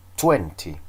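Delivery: twenty with stress on first syllable TWEN. Counting lesson, repeat after me: stress on first syllable of twenty. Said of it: "I put the stress in the first syllable".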